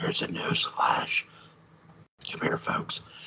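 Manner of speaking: conspiratorial whisper.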